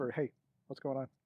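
soft, hushed, private half-whispered word. Pulling a lord aside to ask him quietly: half-whispering. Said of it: "I pull Lord Lee aside and I whisper".

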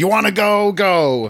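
mock shouted line, high and drawn-out. Acting out an argument between two film characters, retelling a yell. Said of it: "Why are they yelling at each other?".

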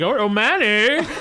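wild, high, raving madman scream. Retelling a game fight, speaker acts out Crumb screaming like a madman. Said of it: "he was screaming like a madman".

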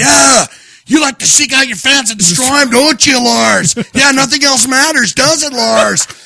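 mock, high-pitched, full-throated screaming. Speaker retells screaming at a limo carrying Lars; retelling a scream. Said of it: "I'm screaming at the limo now going".

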